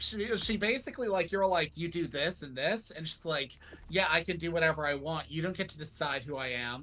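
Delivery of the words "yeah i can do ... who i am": usual speaking voice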